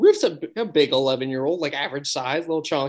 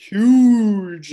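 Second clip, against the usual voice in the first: huge with heavy stress on H and G; 6 semitones higher, 8 dB louder than usual. Storyteller describing a big man shows how to say the word, stressing huge. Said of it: "with an emphasis on the H and the G".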